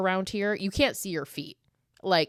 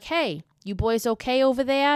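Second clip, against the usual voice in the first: heavy put-on Massachusetts accent, pitched up; 5 semitones higher, 5 dB louder than usual. Act out the fisherman in a rowboat calling to the boys in their canoe, imitating a strong Massachusetts accent. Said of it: "such a fucking Massachusetts accent".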